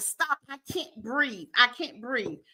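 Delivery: put-on crying child voice. Describing a six-year-old watching her mom choked out, imitating a child crying. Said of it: "And she's crying like".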